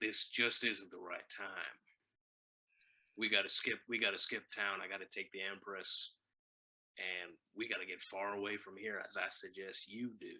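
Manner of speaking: soft, low baritone southern drawl, deep and quiet. Recapping a scene, voicing Harris Birch speaking to Keith: baritone southern drawl. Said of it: "in his baritone southern drawl".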